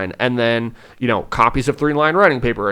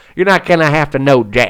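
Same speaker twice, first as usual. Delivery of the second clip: terrible put-on Southern accent; 3 dB louder than usual. Explaining the phonogram cards to educators, slipping into a bad southern accent. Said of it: "my terrible Southern accent in there".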